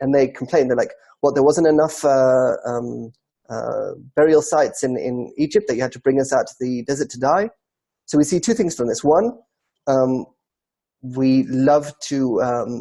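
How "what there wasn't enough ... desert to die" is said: ordinary talk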